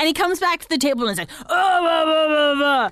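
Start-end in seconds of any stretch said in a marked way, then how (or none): 1.4-2.9 put-on mad, grumbling babble. Retelling a man coming back to the table upset over the bill: mock-mad impression of Chris. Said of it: "Your impersonation of him is spot on".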